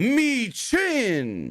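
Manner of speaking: very high, swooping, sing-song ring announcer call. Retelling a match entrance: imitating Byron's ring intro. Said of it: "And Byron does the intros, making her way to the ring".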